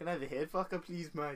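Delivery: attempted South African accent. Asked to do a South African version of someone: South African accent attempt. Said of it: "Give me your South African version".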